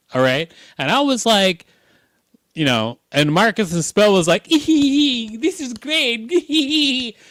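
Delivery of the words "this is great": very high, happy, put-on elf voice, stretched. Retelling how someone on set reacted, quoting him in an elf voice. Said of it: "That's exactly what he sounded like, an elf".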